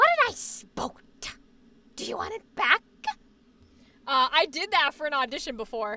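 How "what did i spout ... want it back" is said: put-on scary, villainous horror clown voice. Quoting a scene from the It movies: Pennywise voice. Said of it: "I used to do his voice, and I would do a little bit of an impression".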